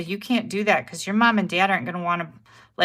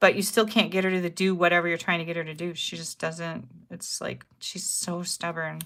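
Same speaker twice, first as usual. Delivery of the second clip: ordinary talk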